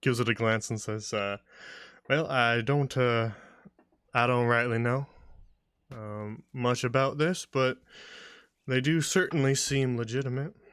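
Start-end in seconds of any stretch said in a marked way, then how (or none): 2.1-10.5 casual, offhand, unbothered nonchalant character voice. Voicing the elven guard glancing at an emblem: nonchalant character voice. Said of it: "very nonchalantly".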